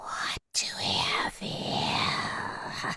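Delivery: odd, breathy, whispered creature voice. Voicing a figure who finds the party staring: unexpected put-on creature voice. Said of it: "that was not, mm, the voice that I was expecting".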